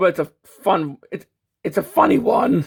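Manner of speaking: voice cracking and breaking mid-phrase. Explaining a design flaw while the voice keeps cracking. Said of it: "my voice is cracked".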